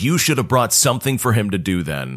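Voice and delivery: plain reading voice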